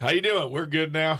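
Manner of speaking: put-on Southern accent. Joking about the town name Goodnow: put-on Southern accent. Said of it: "I sound like a Southern person".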